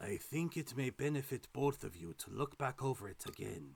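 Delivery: overly raspy voice. Voicing a line aloud: too raspy voice. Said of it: "that was too raspy".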